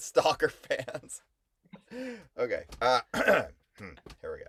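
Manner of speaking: laughing through words with swooping pitch. Resuming a shared reading aloud after a funny remark, laughing while talking. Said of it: "Sorry, I'm still laughing".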